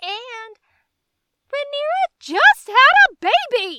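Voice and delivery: very loud, full-throated screaming rant. Reacting to a funeral scene in a show: screaming. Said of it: "I'm screaming again".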